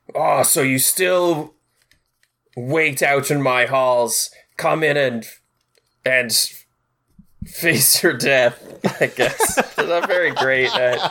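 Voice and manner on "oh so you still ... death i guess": voice called out from behind a closed door. Game master voicing someone behind a door answering the party, loud voice through a door. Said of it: "You just hear a loud voice through the door say".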